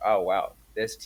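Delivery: normal talking voice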